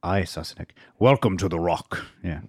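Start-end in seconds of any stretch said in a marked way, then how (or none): 1.0-2.0 put-on Scottish accent. Asked to do the voice again for a listener who calls it convincing, do a Sean Connery impression. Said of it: "Can you do that again?".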